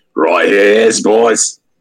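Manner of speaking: fake, put-on Australian accent. Imagining a sniper character speaking: put-on Australian accent. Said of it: "I imagine he's got an Australian accent".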